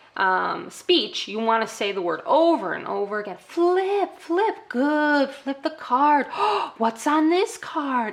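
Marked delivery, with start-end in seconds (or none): 3.5-8.1 very, very excited, high and drawn-out delivery. Demonstrating speech practice with flip cards, very, very excited. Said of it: "I'm being very, very excited".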